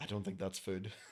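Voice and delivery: put-on whisper. Retelling what his girlfriend whispered when the delivery guy came in, retelling a whisper. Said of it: "She whispers over to me".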